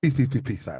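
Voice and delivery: loud, shouted, booming pharaoh voice.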